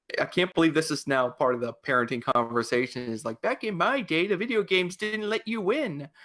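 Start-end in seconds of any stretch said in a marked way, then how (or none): 3.4-6.0 put-on old man or old lady voice, folksy. Joking about parenting and old video games, put-on old man, old lady voice. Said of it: "we're going into our old man, old lady mode here now".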